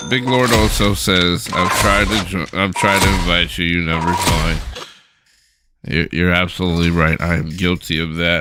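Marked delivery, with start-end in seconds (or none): none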